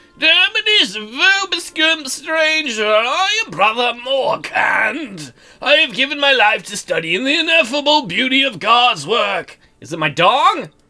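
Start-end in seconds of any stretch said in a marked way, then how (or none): 0.2-9.6 put-on old man voice, higher and slower. Voicing the character greeting a stranger, in a Brother Morkant old man voice. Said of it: "we're gonna give him a old man voice".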